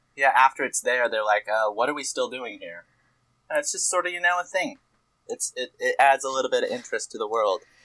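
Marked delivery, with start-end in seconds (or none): none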